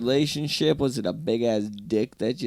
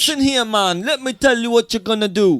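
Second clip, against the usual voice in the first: fake Mexican accent, much higher pitch; 10 semitones higher, 8 dB louder than usual. Imitating a worldly woman who might be a therapist in mexico, put-on mexican accent. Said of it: "And a perfect Mexican accent".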